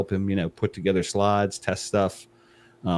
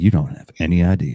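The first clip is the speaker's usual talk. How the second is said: put-on hyped sales pitch voice, louder; 2 semitones lower, 7 dB louder than usual. Pretending to be the marketing guy praising the product: put-on marketing voice. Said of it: "There's the marketing voice".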